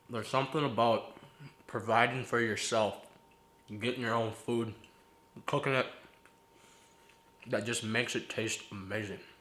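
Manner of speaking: talking with mouth full of food. Speaker eating food they got and cooked themselves, talking with food in mouth. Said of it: "I'm sorry for talking with food in my mouth".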